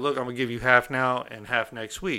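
ordinary delivery

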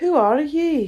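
drowsy, languid, sleepy voice, pitched high. Narrator reads the caterpillar's first words to her, in a languid, sleepy voice. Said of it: "addressed her in a languid, sleepy voice".

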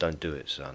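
quiet, soft. The narrator pleads with a boy sitting at the keys, quietly. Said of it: "I said quietly".

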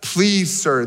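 put-on sarcastic tone. Reading the woman at the well's reply to Jesus: acting out a sarcastic reply. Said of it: "this is where she gets sarcastic".

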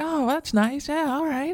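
very high-pitched, flirty talking voice

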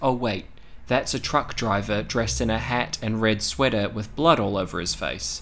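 plain

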